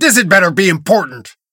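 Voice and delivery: sharp, barked. Answering a knock at his door, barking. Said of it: "He barks".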